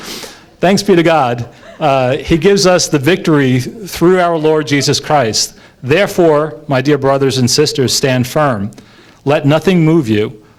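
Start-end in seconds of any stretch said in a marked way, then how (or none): 0.0-1.5 slow, kindly, very pleasant tone. Reading the verse after mocking an angry version: very pleasant. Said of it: "I say it in a very pleasant way".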